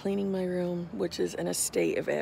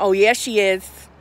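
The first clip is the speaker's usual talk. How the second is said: very loud, full-throated screaming yell; 2 semitones higher, 13 dB louder than usual. Describing what she is doing at home, retelling a scream at the tv. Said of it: "She's screaming at the TV going".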